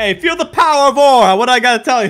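very loud, belted New York accent. Imagining how Lucario would talk instead: Lucario with New York accent. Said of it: "would have been a lot cooler if he had a New York accent".

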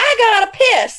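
full-blast, all-out yell, pitched very high. Retelling a patient yelling out of the blue to the nurse, retelling a yell. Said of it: "he yells".

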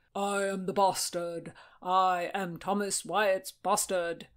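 slow intoning like a stage chorus. Narrator reads a man striking his father's pose for his kinsman; intoned in a deep voice. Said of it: "Acting a deep-voiced chorus, Francis took up his father's pose and intoned".

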